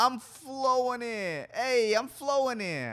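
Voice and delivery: very slow, very high, loud, drawn-out New York accent. Trying out a planned stage bit, doing an impression of the New York floodwaters. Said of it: "This is my impression of uh, the floodwaters from New York".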